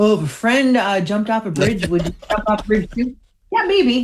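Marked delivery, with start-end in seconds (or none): 0.0-3.2 quick, rattled-off dad voice. You are letting the others hear what your dad would say about peer pressure, imitating own dad. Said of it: "You can hear my dad".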